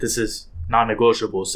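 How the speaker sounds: usual speaking voice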